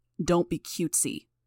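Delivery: growling. A man answers a girl he pushed who scolds him, growled. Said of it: "he growled".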